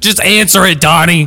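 loud, high, insistent, pushing yell. Interviewing donnie and pressing him to answer the question, yelling. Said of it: "I'm sorry I'm yelling at you".

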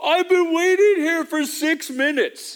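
put-on, very high, loud, outraged, appalled kid's yell. Retelling a kid at a Chick-fil-A who yells: imitating a yell. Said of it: "he literally yells".

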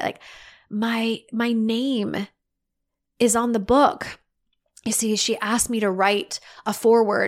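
very slow, tearing up partway through. Speaker telling a personal story, tearing up. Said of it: "I'm tearing up as I say it".

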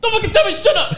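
very high, angry, mad voice. Retelling a high school classmate snapping from the back: imitating Jonathan's mad retort. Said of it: "Who's mad?".

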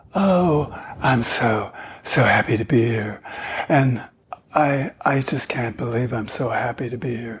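airy, breathy voice with lots of air. Demonstrating the first voice type, airy: breathy Marilyn Monroe voice. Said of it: "The first one is airy".

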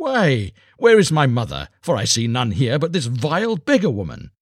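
derisive, scornful disbelief, high laughing sneer. The star child sees the beggar woman waiting for him, laughing scornfully. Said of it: "he laughed scornfully and said".

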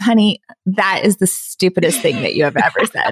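put-on straight-faced deadpan delivery. Retelling what the husband said to a blogging plan: imitating husband's straight-faced delivery. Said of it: "Totally straight-faced".

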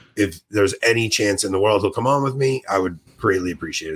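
ordinary delivery

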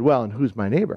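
put-on smug tone, mocking. Speaker retells a man's question to Jesus, mock-smug. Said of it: "then he smugly said".

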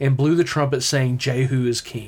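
ordinary talk, nothing marked

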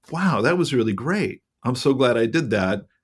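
usual speaking voice

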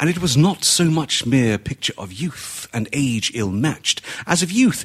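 plain

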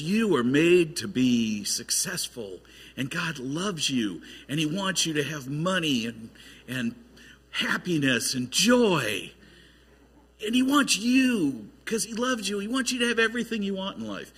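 put-on silky, polished, smooth Texas preacher accent. Speaker imitating a guy telling people what they want to hear, smooth Texas accent. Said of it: "with a smooth Texas accent says".

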